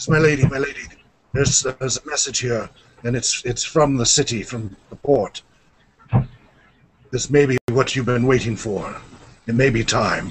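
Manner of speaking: put-on old man's fast, hushed, stumbling whisper. Game master voices an armored old man whispering to a lady: whispering old man. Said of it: "clearly whispering to a female voice".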